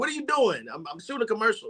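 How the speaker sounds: put-on New York accent. Telling a story about a man on the street, doing his New Yorker impression. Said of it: "he's a New Yorker".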